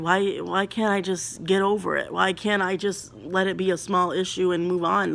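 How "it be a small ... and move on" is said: ordinary talk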